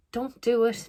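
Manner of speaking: play-acted, loud, high-pitched screaming. Retelling watching a film and reacting: imitating screaming at the TV. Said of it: "screaming at the T V".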